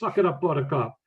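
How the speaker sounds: mild mock yell. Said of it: "I can hear 'em yelling now".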